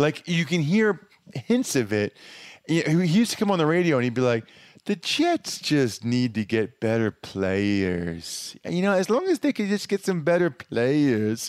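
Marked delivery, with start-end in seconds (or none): 4.9-11.5 put-on Alabama twang blended with New York accent. Retelling how Joe Namath talked on the radio: Joe Namath impression. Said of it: "he legitimately has a Pittsburgh slash Alabama slash New York accent".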